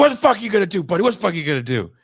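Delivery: fast, loud tough-guy voice. Speaker retelling an East Coast guy's comeback to his threat, talking tough. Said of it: "he's gonna talk real tough".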